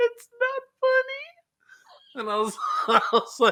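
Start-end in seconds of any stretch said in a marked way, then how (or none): 0.0-2.2 very high, sobbing, tearful crying voice. Retelling how she cried and shook her head at you, imitating her crying. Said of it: "starts crying and shaking her head".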